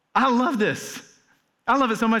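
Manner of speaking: choked up, high voice cracking and breaking with emotion. Reacting to a Bible verse just read aloud: voice cracking with emotion. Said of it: "my voice just kinda cracked".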